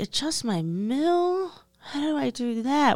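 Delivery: very slow, drawn-out, high whine. Speaker acting out asking someone to adjust the mill, put-on whiny voice. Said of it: "I do that whiny voice".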